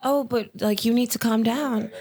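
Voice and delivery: cool, calm, placating, settled-down voice. Retelling a friend's passive aggressive reply: imitating a friend talking calmly. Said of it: "she come right down".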